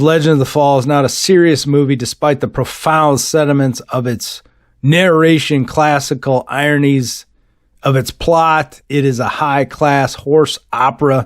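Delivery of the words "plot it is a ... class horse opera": normal talking voice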